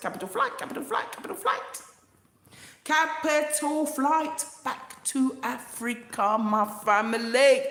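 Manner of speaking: insistent, emphatic, hammered home with repetition. Addressing viewers through the camera, shouting. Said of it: "I'm going to shout in the camera".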